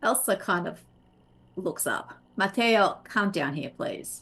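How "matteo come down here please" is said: tough, firm, intimidating don't-mess-with-me tone. Narrating a game scene, the speaker voices a character calling Matteo down: Elsa's don't-mess-with-me tone. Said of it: "her voice has that tone of, "Don't mess with me".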